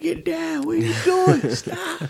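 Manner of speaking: put-on screaming. Retelling yelling at a little boy who was screaming and jumping around, retelling a scream. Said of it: "I'm screaming at him".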